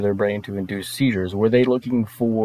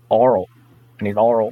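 fake Alabama-sounding accent. Showing how someone in Russia asks for a favor: Alabama-sounding accent. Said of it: "That sounds like you're from Alabama".

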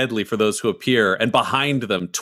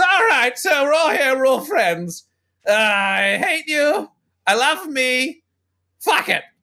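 very high-pitched announcer-style call; 14 semitones higher than usual. Voicing Gaz speaking to the arena from above: Gaz's voice. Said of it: "You can hear Gaz's voice echoing from above. He says".

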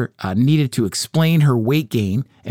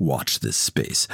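whispered, low, breathy, self-important journalist gravity; 12 semitones lower, 8 dB quieter than usual. Mocking a smug, self-important journalist's sign-off: put-on self-serious dropped voice. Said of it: "I drop my voice in the most self-serious way possible".

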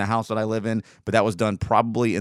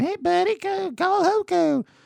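put-on baby talk, much higher pitch; 13 semitones higher, 3 dB louder than usual. Describing a local business's advertising, you act out how the ad talks to a baby, in a put-on baby talk voice. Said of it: "the baby talking".

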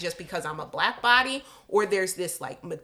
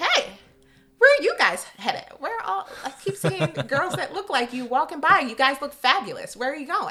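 fake, raised, pitched-up young woman voice; 8 semitones higher, 5 dB louder than usual.

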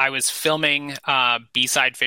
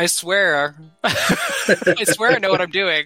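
mock high, slow, drawn-out begging tone; 6 semitones higher than usual. Retelling how they begged a guest on a fishing trip: retelling a plea.

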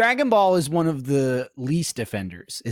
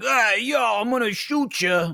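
very high, cartoonish, put-on dub voice; 10 semitones higher than usual. Speaker imagines how a character would talk in the dub: imagined dubbed character voice. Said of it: "then she'd talk like this".

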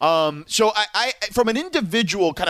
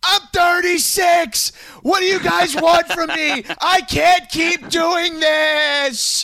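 shrill, very high-pitched yelling rant; 12 semitones higher, 4 dB louder than usual. Describe a video of a guy acting like LeBron learning of a trade, imitating LeBron yelling. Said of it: "the guy's just yelling".

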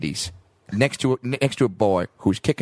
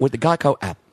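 put-on Australian-tinged commercial character voice; 3 semitones higher than usual. Quoting the ad line in Geico ad voice. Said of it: "There it is. Locked onto it".

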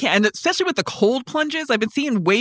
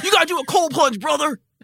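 over-the-top, hyped-up wrestling promo style delivery; 5 semitones higher than usual. Mocking how people talk about biohacking: Macho Man Randy Savage voice. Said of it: "sound like Macho Man Randy Savage".

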